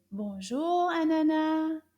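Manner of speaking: nice, loud, high-pitched, warm and friendly voice. Showing the class how to greet the puppet: nice loud voice. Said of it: "In a nice loud voice".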